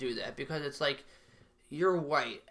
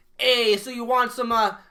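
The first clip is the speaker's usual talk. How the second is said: put-on, high-pitched Italian accent; 9 semitones higher, 10 dB louder than usual. Mocking how some people act out their heritage: imitating italian people. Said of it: "Italian will, like".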